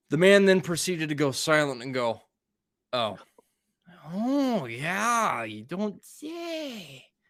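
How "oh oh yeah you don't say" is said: very slow, sing-song, put-on Wisconsin drawl. Retelling how a man reacted, imitating him: Wisconsin accent. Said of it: "It's a great Wisconsin accent".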